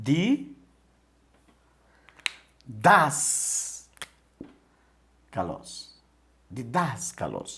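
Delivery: slow, syllable by syllable, stress on DAS.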